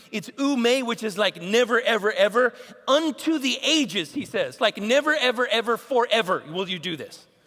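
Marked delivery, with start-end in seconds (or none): none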